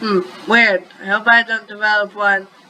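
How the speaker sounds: plain reading voice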